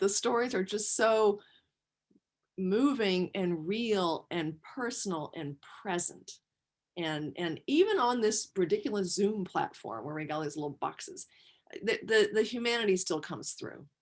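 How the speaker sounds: choked-up voice catching on held-back tears, near tearful. Describing moving stories heard from others, on the verge of tears. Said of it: "I'm gonna cry again".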